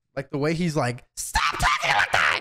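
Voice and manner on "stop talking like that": voice dropped way down, goofy cartoon style. Watching an anime villain and imitating how he sounds like Buggy. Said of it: "That shit sounds like Buggy".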